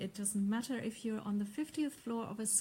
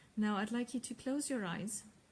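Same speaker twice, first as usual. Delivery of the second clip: plain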